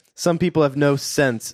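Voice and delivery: normal talking voice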